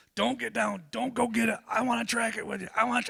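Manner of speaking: screamed, urgent, high, rough yelling. Retelling a friend's phone call after the shot: imitating a friend screaming. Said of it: "he's screaming at me".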